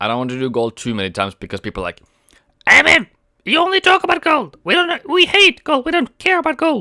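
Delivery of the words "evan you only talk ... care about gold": squeaky, very high-pitched voice. Quoting what people say about gold, the speaker does a Mickey Mouse impression. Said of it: "that was my Minnie Mouse, Mickey Mouse impression".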